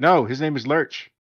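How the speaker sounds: ordinary delivery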